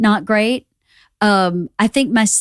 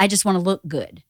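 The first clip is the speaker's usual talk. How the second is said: usual speaking voice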